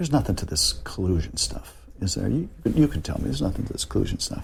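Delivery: hushed, confiding, conspiratorial, breathy near-whisper. Retelling what a man said to him at the airport: imitating conspiratorial tone. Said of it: "in a very conspiratorial tone".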